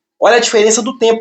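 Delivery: ordinary talk, nothing marked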